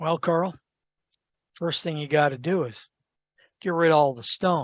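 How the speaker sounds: soft, bone-dry, utterly deadpan delivery. Storyteller quoting Charlie's answer to Carl's question, retelling Charlie's deadpan reply.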